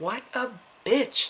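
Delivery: high, slow, drawn-out disgusted aside. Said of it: "I'm just like".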